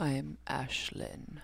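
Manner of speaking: very low, sultry horror-announcer voice. Introducing oneself on a recorded episode: sultry voice. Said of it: "it was sultry".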